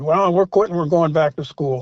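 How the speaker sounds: usual speaking voice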